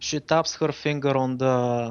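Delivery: ordinary delivery, nothing marked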